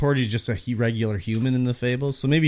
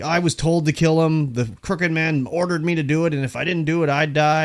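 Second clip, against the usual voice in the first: mock fed-up, annoyed, pissed-off angry outburst; 4 semitones higher than usual. Retelling a game scene, quoting Georgie Porgy, mock-angry. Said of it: "he's kind of pissed off and like".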